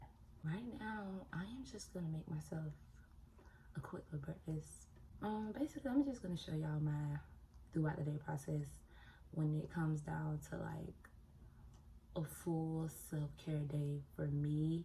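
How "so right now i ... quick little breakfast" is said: soft, voiceless whisper. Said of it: "I'm trying to be quiet because some people are still sleeping".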